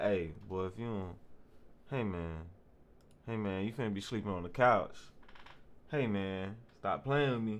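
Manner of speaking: ordinary talk, nothing marked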